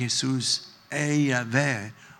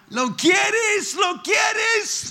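play-acted, very high, drawn-out preacher's shout; 4 dB louder than usual. Retelling how a preacher pointed and called out to him: imitating a preacher shouting. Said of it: "sino lo dice a grito".

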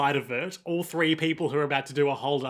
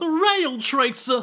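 bad put-on voice, loud and squeaky high; 11 semitones higher, 5 dB louder than usual. The others try to guess who his bad impression sounds like; bad put-on voice. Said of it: "Who speaks like that?".

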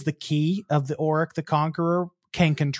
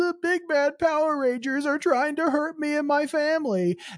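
very high put-on weepy whimper, fake crying; 11 semitones higher than usual. Retelling how a villain pleads with crocodile tears: imitating fake crocodile tears. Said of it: "does these crocodile tears".

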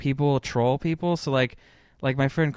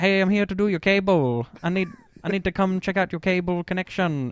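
horrible, bad fake Vietnamese accent, pitched up; 6 semitones higher than usual. Retelling how someone posed as a cable repairman at people's doors, horrible Vietnamese accent impression. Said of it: "do like a horrible Vietnamese impression, like accent".

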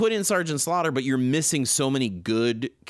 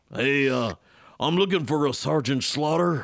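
put-on drawling southern accent. Retelling a scene from a cartoon episode: Beachhead's southern accent. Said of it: "With his southern accent".

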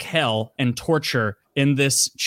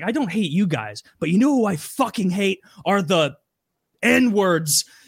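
mock screaming in rage; 4 semitones higher than usual. Retelling how a man on a show lost it at the viewers, retelling a furious scream. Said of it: "he starts screaming and he's like".

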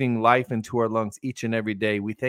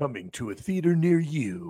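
film-announcer movie trailer voiceover read; 3 semitones higher, 4 dB quieter than usual. Describing someone throwing a voiceover on a clip, doing the movie trailer voice. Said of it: "he's trying the movie voice".

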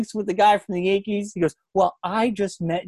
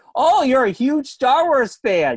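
put-on sarcasm, much higher pitch; 5 semitones higher than usual. Retelling what podcast hosts said to their guest, retelling a sarcastic remark.

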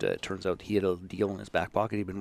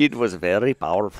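very loud, bad Indian accent; 9 dB louder than usual. Retrying the Polish fellow's words: bad Polish accent sounding East Indian. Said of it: "That was way more East Indian".

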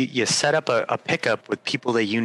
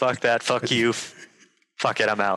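put-on angry coach voice, ranting. Asked to impersonate Torts addressing his team after a loss, impersonating Torts' mock-angry rant. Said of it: "his best impersonation of Torts talking to his team".

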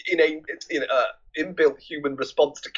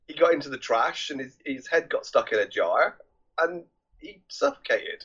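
ordinary talk, nothing marked

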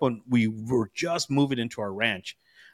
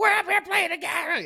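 put-on very high, sharp yell. Telling his dad how a friend yelled at his mom, retelling a yell. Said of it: "he just like yelled at her".

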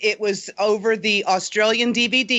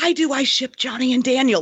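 put-on whisper, higher; 5 semitones higher than usual. Retelling what a fan asked the group, imitating someone whispering. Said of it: "Like, whispering".

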